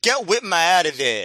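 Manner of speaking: put-on thick, heavy New York accent. Retelling a match, the speaker quotes a guy in the crowd; thick new york accent. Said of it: "in a real thick New York accent".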